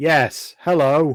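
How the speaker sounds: flat, level, toneless monotone. Roleplaying, a player answers a voice whispering close in their ear, very loud monotone. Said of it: "in a very loud monotone voice".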